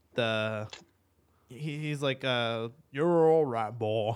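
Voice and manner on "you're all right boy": put-on Western cowboy accent. Imitating Arthur petting his horse: Arthur's accent. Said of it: "I love his accent".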